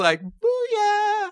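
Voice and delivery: very high-pitched voice. Telling about a man reacting to a text: imitating his really high voice. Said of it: "he did it in a really high voice".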